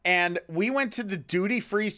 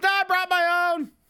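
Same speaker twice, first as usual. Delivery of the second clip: as loud as possible, very high-pitched voice; 13 semitones higher, 4 dB louder than usual. Retelling a man's answer to an offer of alcohol, retelling a very loud reply. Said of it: "Just as loud as he can".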